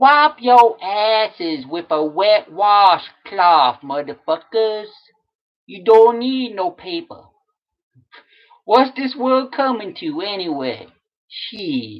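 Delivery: put-on jive talk. Performing a Facebook post written in jive talk: put-on jive talk. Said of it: "I did some Jive Talk. I'm gonna do it for you right now".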